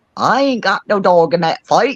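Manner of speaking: put-on English accent. Speaker retelling what a woman says when asked to take sides, imitating her english accent. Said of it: "she'll say it with her English accent".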